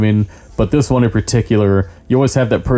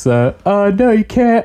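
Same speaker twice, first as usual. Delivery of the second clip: very effeminate voice, much higher pitched; 11 semitones higher than usual. Recounting a man refusing to give something back: very effeminate voice. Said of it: "he said in a very effeminate voice".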